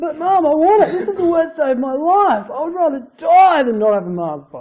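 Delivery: put-on high-pitched childlike meltdown. Comparing Jonah to a kid refused a Mars bar; imitating a child's tantrum. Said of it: "the kid just loses it".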